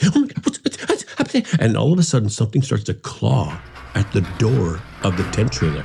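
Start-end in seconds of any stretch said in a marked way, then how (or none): 0.0-1.5 put-on frantic, stammering panic, very high and rushed. Telling the story of something pushing against the tent trailer, imitating Jeannie's panic. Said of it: "Jeannie's getting into more of a panic".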